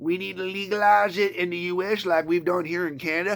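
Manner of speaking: plain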